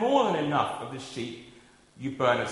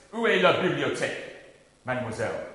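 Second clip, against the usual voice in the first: ordinary talk, nothing marked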